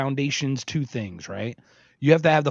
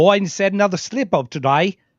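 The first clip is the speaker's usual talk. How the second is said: loud, high, put-on Australian accent; 5 semitones higher, 5 dB louder than usual. Imitating Australian news bashing Biden every day, in an Australian accent. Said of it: "with their Australian accent, going".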